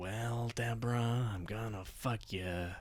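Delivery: badly done celebrity voice, hushed, soft, slow, drawn-out. Doing a celebrity impression on request: Jack Nicholson impression. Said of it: "I could do Jack Nicholson".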